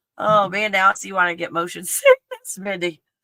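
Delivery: words broken up by laughter. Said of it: "Sorry, I'm laughing".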